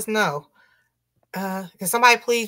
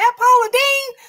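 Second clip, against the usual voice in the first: very high, loud, surprised exclamation. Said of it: "I was like".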